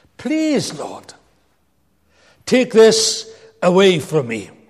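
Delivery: swooping, begging, imploring pleading voice. Retelling how Paul begged God a third time: acting out the pleading. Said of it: "He begged God".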